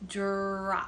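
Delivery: drop slowly stretched out sound by sound. Listening for sound patterns in a word, 'drop' said slowly. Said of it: "I'm going to say that slowly".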